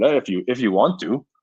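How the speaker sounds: put-on big, heavy, broad Russian accent, laid on thick. Retelling a teammate's answer about workouts: imitating Ovi's big Russian accent. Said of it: "big Russian accent".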